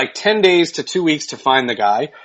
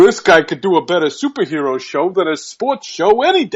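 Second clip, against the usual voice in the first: imitated New York accent. Retelling what a man said with his arm around the speaker: new york accent. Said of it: "he's got a New York accent".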